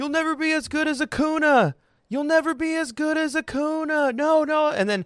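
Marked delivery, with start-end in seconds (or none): 0.0-4.1 put-on yell, pitched much higher. Retelling a fan heckling a player from near the dugout: retelling a heckler's yell. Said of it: "and he's just yelling".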